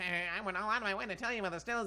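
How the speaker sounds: female character voice. Showing how a female character should sound if hired to voice her: guessed voice for the character. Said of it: "I think she's gonna sound like this".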